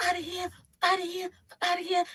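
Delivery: very high, shrill screaming. Retelling how a man walked outside and started screaming: imitating a man screaming. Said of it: "he starts, like, screaming".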